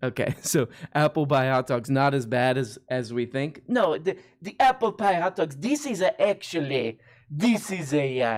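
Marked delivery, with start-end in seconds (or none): 3.7-8.4 clumsy, fake, put-on Italian accent. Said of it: "your Italian accent".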